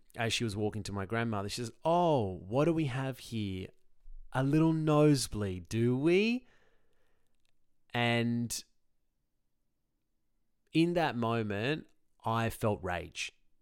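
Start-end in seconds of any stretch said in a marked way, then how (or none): 1.9-6.5 condescending, jovial sing-song, raised pitch. Retelling the head paramedic's words on arriving: condescending, jovial tone. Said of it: "condescending, jovial term".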